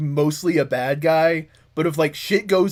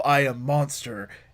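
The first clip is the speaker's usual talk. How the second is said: put-on brooding voice, quieter; 3 semitones lower, 5 dB quieter than usual. Acting out Kane in an imagined comic scene: brooding Kane voice. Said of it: "sometimes I revert back to my cloning brooding age".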